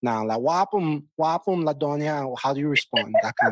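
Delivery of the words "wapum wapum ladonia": attempted Jamaican Patois accent with lilt. Trying out a Patois greeting to a peer: attempted Jamaican Patois accent. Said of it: "forgive my accent".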